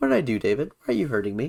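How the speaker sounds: put-on eerily calm, innocent, swooping voice. Retelling a movie scene of a woman being buried, in a put-on super calm voice. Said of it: "super calm voice".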